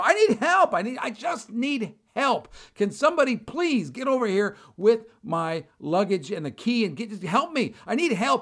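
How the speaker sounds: mock high-pitched yelling, over and over. Retelling his own side of a phone call, yelling for help. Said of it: "I'm literally yelling i go".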